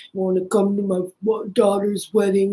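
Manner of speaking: put-on mumbling voice, as with marbles in mouth. Joking about sounding mumbled after surgery: The Godfather voice. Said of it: "if I sound like the dude from The Godfather".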